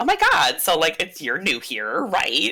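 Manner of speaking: put-on extroverted, high, swooping Valley Girl chatter. Describing how she heard a book character while reading, in a valley girl voice. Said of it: "I read her in a Valley Girl sort of voice".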